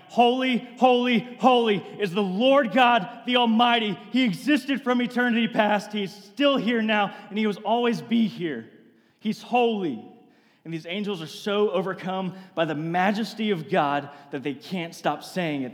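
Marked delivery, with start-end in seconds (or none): 0.2-10.0 acted, high shout, almost in tears. Describing angels before god, acting out their shout, almost like crying. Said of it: "they shout it almost like they're crying".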